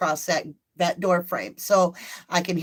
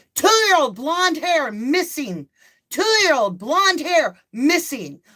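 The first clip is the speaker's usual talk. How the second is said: high, full-lunged screaming at top of lungs, repeated; 7 semitones higher, 3 dB louder than usual. Retelling running into the street after a missing two-year-old: retelling screaming at top of lungs. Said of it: "I'm screaming at the top of my lungs".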